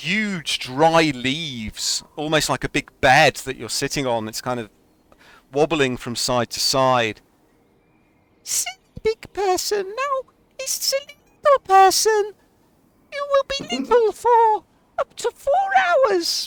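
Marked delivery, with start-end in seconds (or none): 8.4-16.5 very high, tiny little fairy voice. Ethren flits down to a player sitting on huge leaves, in Ethren's voice. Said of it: "Ethren flits down towards you".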